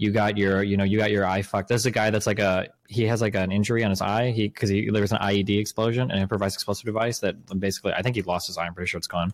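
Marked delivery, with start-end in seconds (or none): 0.0-1.7 mock sarcastic delivery. Retelling a quoted remark to another speaker: imitating a sarcastic tone. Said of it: "sarcastically said".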